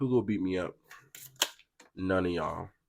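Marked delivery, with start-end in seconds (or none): none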